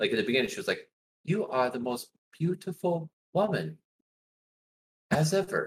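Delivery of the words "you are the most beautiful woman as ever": slow, pitched-up, mechanical robot-like voice. Retelling a child actor's line from a movie: imitating robotic talking. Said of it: "She talked like a robot in the beginning".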